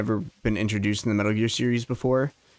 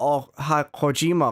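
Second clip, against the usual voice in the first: terrible, badly done fake Japanese accent; 4 semitones higher than usual. Retelling a greeting as others said he delivered it: worst Japanese accent possible. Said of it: "you said hi in the worst Japanese accent possible".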